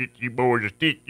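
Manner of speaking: broad, exaggerated Southern accent, laid on thick. Describing a southern accent by contrast, imitating a thick southern drawl. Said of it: "it's not like the guy that literally".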